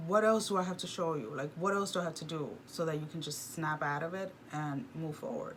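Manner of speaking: ordinary talk, nothing marked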